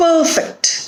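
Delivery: weight on first syllable PER in perfect. Reading example words in a pronunciation lesson, stress on PER in perfect. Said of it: "here in these words the stress shifts".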